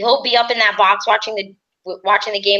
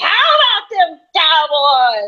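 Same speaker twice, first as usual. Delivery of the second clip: put-on rowdy drunken scream, high and swooping; 7 semitones higher, 3 dB louder than usual. Speaker imagines herself drunk and rowdy on a plane, mock drunken rowdy scream. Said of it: "get a little bit drunk and rowdy on the plane and start screaming".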